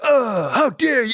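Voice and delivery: high wrestler voice pushed out from the chest. Describing Triple H's delivery: Triple H voice from the chest. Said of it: "it's in the chest".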